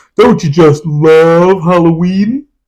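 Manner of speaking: dumb, silly cartoon voice, love drawn out. Mocking an awful film, the speaker quotes the Mask at the door in a stupid Mask voice. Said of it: "he's got this stupid voice".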